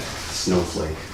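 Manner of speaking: very soft, low muttering under the breath. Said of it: "you did it too audibly".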